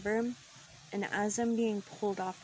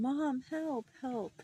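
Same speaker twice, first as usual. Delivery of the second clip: mock crying, high, tearful and pleading; 5 semitones higher than usual. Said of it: "I'm screaming".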